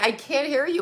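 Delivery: high, teary voice, speaking through tears. Retelling a reply to a friend's upsetting words: retelling crying. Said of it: "And then I started visibly crying".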